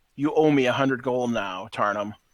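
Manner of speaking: plain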